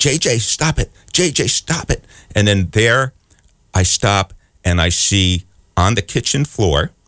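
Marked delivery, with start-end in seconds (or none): 0.0-2.0 play-acted very high, pitched-up scolding. The speaker acts out yelling at their cat to stop, retelling own yell at cat. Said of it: "I'm yelling".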